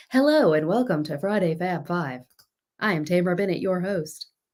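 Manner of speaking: put-on tv news announcer delivery. Host showing viewers her announcer voice after a viewer's comment, in a tv news anchor voice. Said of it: "That is my news T V news anchor voice".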